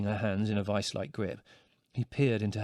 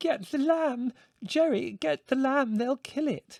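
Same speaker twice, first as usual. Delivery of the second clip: very high, slow, squeaky pleading voice. Mother shouts instructions to jerry, squeaking. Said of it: "she squeaked".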